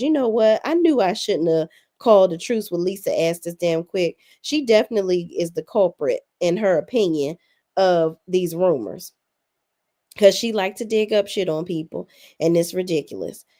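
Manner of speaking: plain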